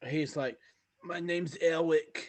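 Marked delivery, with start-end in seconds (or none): 1.0-2.3 put-on high, loud, nasal voice. Retelling a player heard in the game chat, imitating how he talked. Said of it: "talking like that".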